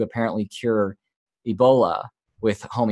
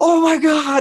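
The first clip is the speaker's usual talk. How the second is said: shrill, very high, loud excited yell; 6 dB louder than usual. Retelling reading comments while his wife drove: imitating own past yell. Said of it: "and I'm, like, yelling".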